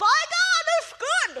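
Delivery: very high, shrill, swooping yell with mouth full. A narrator with a mouth full of muddy bread calls to friends, yelling with mouth full. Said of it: "opened my muddy mouth full of bread, and I yelled".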